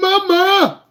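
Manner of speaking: mock very high, frantic, panicked, drawn-out wail. Describing a young driver seeing someone merging: imitating a panicked driver's cry. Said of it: "you panic".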